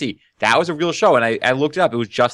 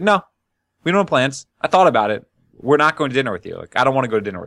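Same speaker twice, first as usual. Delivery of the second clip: imitated flat, blunt delivery. Retelling a scene where Cheryl covers for Larry, mock-blunt Larry delivery. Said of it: "like perfectly blunt".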